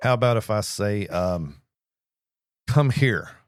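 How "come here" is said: raised, pitched-up, authoritative commanding tone. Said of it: "show authority".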